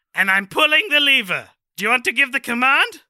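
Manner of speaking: high, loud scientist voice swooping upward. Improvising a scene about bringing a corpse to life: Doctor Doofenshmirtz voice. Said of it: "I just sound like Doctor Doofenshmirtz".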